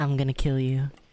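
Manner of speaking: mimicked dead-toned voice. Retelling a sudden scary line from the game: imitating a dead-toned voice. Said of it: "With a dead toned voice".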